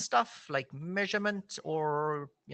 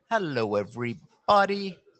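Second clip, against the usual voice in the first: slow, calm delivery with a slightly raised voice; 8 dB louder than usual. Opening the session so the audience stops talking, slow, calm voice. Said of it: "if I spoke slowly and in a calm voice".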